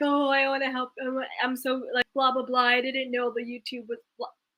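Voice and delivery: mock blubbering, fake sobbing and crying. Retelling a scene where Doctor Heavenly is fake crying: imitating fake crying. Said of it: "Doctor Heavenly is fake crying, like".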